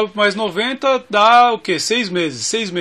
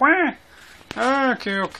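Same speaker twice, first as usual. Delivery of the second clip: slow, deliberate, quacking duck voice; 3 semitones higher, 4 dB quieter than usual. Imitating Moro answering a question: Moro's duck-like voice. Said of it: "o Moro com aquela voz de marreco fala assim".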